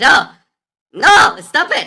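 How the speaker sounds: shouting. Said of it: "I have to shout every time Matt comes into chat".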